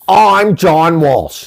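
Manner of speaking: rough put-on TV host voice. Doing a John Walsh impression, welcoming viewers back: John Walsh impression. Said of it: "This is a terrible impression".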